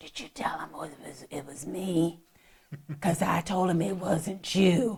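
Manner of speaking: very soft, quiet, hushed, barely audible whisper. Retelling what she said in the back of the police car: imitating someone whispering. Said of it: "why are you whispering?".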